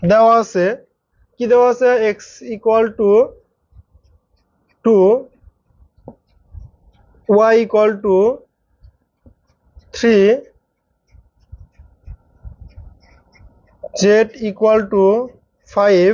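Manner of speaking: slow, dictation-like speech. Speaker dictates the given values for listeners to write down, speaking slowly. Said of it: "আমি আস্তে আস্তে বলি।".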